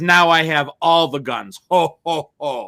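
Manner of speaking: slow, deliberate, carefully landed ho ho ho. Retelling a TV scene where a character gets all the guns: Santa Claus voice. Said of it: "Why is he talking like Santa Claus?".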